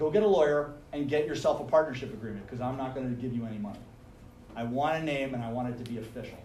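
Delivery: ordinary talk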